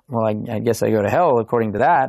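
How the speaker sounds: ordinary delivery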